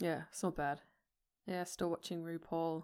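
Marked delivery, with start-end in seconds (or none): 1.5-2.8 unenthusiastic and unhappy-sounding, quieter. Mentioning still watching a show: sounding unhappy about it. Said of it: "Don't sound so happy about it".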